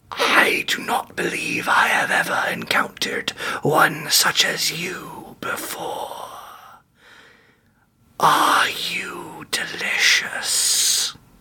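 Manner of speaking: breathy, terrible dark creature voice, breathed out. The game master voices what Loan hears in an addled state, in a terrible Mouth of Sauron voice. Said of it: "It's terrible, like mouth of Sauron".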